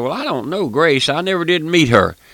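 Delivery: lightly sarcastic, wry, mocking tone. Retelling a lady's remark in a conversation about grace: imitating a sarcastic remark. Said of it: "she was making fun, a little sarcastic".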